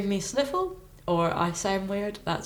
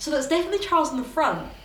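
high, fast, baffled rambling. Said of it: "Because I was like".

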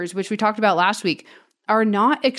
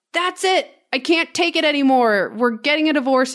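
high-pitched yell, kept light and mild; 5 semitones higher than usual. Retelling a story where a fed-up wife yells at her husband: imitating a wife yelling. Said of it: "and she yells".

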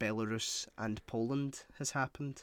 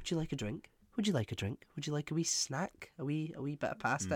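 put-on calm, eager-to-please, rattled-off host voice; 2 semitones higher than usual. Retelling how he acts when people come over, imitating someone acting calm. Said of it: "really calm when people come over".

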